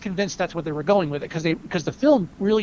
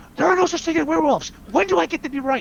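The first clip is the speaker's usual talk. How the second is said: put-on very high-pitched shouted rant; 10 semitones higher than usual. Speaker quotes a trailer scene where a character yells at cops: imitating someone yelling. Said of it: "he's yelling at the cops".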